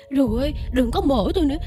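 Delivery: high, terrified, pleading begging.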